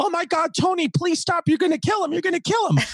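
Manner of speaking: very high, pleading put-on scream. Retelling a parent screaming from an upstairs window: imitating mother screaming. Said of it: "I hear my mother screaming from the top window".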